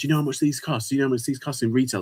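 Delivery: put-on high-pitched, indignant, outraged rant. Describing how online resellers react at auctions, imitating an angry outburst. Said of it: "they lose their shit".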